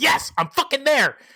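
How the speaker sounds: keen excitement. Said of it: "he can't wait to get in on it".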